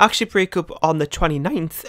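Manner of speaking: voice breaking mid-line. Chatting to listeners, the voice cracking. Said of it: "my voice broke there".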